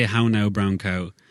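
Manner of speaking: rural Irish countryside accent. Showing how to say a practice phrase: rural Irish accent. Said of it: "every vowel would have an ooh at the end of it for me".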